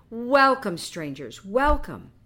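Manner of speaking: heartiest, loud, hospitable, welcoming tone. A man steps forward to greet two strangers, in the heartiest tone imaginable. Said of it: "in the heartiest tone imaginable".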